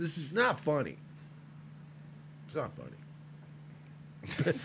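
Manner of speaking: half-whispered, breathy, breaking into laughs. Trying to sound serious to the audience while laughing while talking. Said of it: "I'm laughing because".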